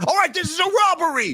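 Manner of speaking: sudden high-pitched outburst. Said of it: "Sorry for that Pulp, uh, Fiction outburst".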